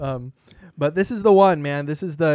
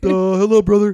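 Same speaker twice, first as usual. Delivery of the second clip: put-on alien voice, much higher, louder; 5 semitones higher, 6 dB louder than usual. On a podcast, after saying someone sounds like Rom, doing a Rom impression. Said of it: "You sound a little like Rom".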